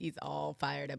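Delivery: mocking, flat monotone delivery.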